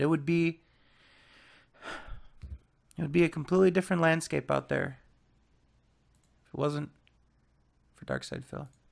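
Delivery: tearful, halting, choked-up voice breaking mid-phrase. Speaker praises a pioneer to the other guys, tearing up a little. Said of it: "I'm kind of tearing up a little bit".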